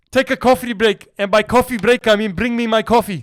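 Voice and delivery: terrible, really bad put-on Irish accent. Joking with friends, quoting a line to Nate in a bad McGregor accent. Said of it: "That was the worst McGregor accent".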